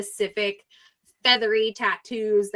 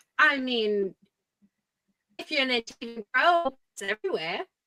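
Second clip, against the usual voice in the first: clumsy, butchered, bad Australian accent; 3 semitones higher than usual. Voicing Rhea answering about the tattoo: Rhea in bad Australian accent. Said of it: "I can butcher Australian".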